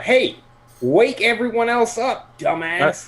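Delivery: very high, bellowed, drawn-out yell. Passing the ship's hold and calling down to Hal: yelling. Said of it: "I'm gonna yell to Hal".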